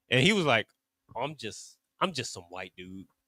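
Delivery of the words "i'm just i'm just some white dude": sheepish, ashamed, very quiet and hushed. Imitating someone asked their ethnicity: imitating a shamed answer. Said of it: "they say it with some shame".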